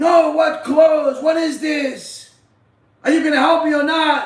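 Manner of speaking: play-acted shrieked yell, screaming woman. Telling a story, the speaker acts out a woman demanding the rabbi's help; imitating a woman screaming. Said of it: "she's screaming and yelling".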